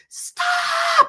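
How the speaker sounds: very high, shrill, stretched-out screaming cry. Retelling waving at an inattentive man to stop him: retelling own scream. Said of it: "I was like screaming".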